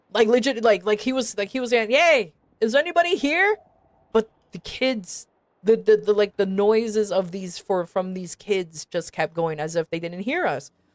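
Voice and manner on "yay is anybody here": mock, high, hollered yell. Retelling how the leader of the group called out, imitating his yell. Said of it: "he started yelling".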